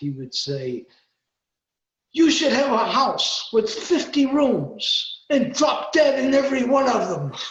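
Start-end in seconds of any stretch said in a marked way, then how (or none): 2.1-7.3 very loud, high, shrill put-on Brooklyn accent. Recalling a man's favorite insults, quoting him in a put-on Brooklyn accent. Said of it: "he had a really, you know, Brooklyn accent".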